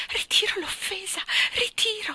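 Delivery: breathless, gasped-out, very high voice. A woman under a stern gaze pleads to be let go, gasping. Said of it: "Boccheggiò la signorina Andrew".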